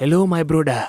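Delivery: film-style West African accent. Mocking how movies stereotype Africans: weird movie West African accent. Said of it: "this weird West African accent".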